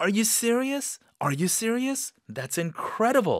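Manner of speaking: very high, happily amazed, pleasantly surprised. Demonstrating a reply to news of a promotion, pleasantly surprised. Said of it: "좋은 놀라움".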